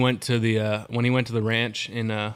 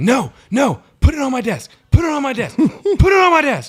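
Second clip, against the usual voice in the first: very high, swooping, rude, repeated yelling; 8 dB louder than usual. Recounting turning in a mail-in ballot, retelling the woman yelling at them. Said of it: "and she just started yelling".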